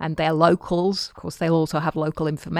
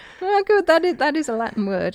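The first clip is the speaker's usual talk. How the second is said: surprised, much higher pitch; 10 semitones higher, 3 dB louder than usual. Looking up a latin translation, reacting to the word just found, surprised. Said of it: "You sound surprised".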